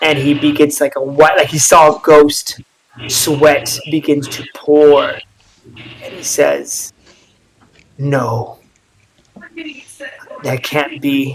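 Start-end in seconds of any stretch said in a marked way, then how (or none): 8.0-11.3 mumbling to himself, quieter. Voicing a sweating, pale figure who saw a ghost: muttering to himself. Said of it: "He's muttering to himself".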